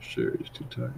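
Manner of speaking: soft, unvoiced, mocking whisper.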